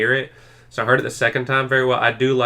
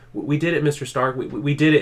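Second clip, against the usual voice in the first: put-on stuttering voice, higher; 4 semitones higher than usual. Retelling a movie scene where Peter Parker speaks to dying Tony: stuttering. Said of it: "And he's, like, stuttering".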